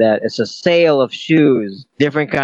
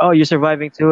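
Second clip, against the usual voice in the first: ordinary talk, nothing marked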